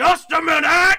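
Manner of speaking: gruff, very loud, very high holler. Narrating as a voice answers the players' knock from inside: gruff hollering voice. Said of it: "a gruff voice hollers from inside".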